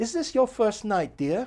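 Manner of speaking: put-on high-pitched, elderly British lady's English accent. Retelling what a lady in the audience asked at a show, old english lady accent. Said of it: "this lady in the audience with an English accent".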